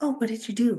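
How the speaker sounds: usual speaking voice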